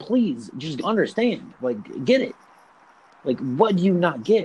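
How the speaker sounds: begging, imploring, pleading tone. Retelling begging someone to understand the rhymes: imitating own past begging. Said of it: "I was, like, begging him".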